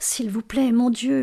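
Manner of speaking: soft, murmuring voice. Delia, hearing Jim's steps on the stairs, prays: murmured prayer. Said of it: "murmura Delia".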